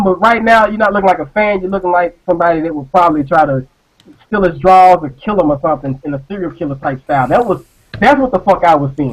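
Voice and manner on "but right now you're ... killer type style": ordinary talk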